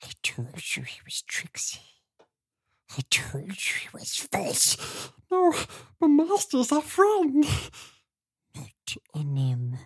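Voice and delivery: very high-pitched creature voice. Taking a turn at impressions with friends, doing a Gollum voice. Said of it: "I'll try Gollum here".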